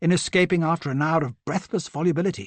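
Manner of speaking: ordinary delivery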